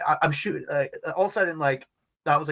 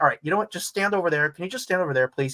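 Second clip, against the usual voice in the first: fast, rattled, panicky, mock flustered voice; 2 semitones higher than usual. Retelling how the security guy spoke: imitating a panicking guard. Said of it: "the guy is panicking".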